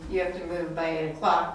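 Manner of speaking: normal talking voice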